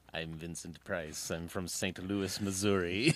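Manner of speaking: very slow, drawn-out faux English accent. Wondering how someone from St. Louis got that accent, do Vincent Price's faux English accent. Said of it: "how do you get that accent from St".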